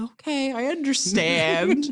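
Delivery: slow, high, drawn-out mock understanding.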